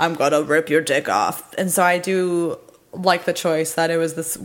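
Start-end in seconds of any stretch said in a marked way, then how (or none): 0.0-1.5 mock devil voice in a man's voice. Speaker shows how the devil's voice sounds in other media, a man's voice. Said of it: "a voice of the devil would be like a man voice".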